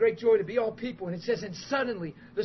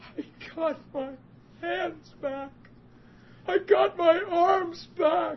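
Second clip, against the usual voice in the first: put-on high, drawn-out bawling, screaming through tears; 8 semitones higher, 4 dB louder than usual. Retelling what a bawling man said, imitating him crying and screaming. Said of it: "He's screaming it out, crying".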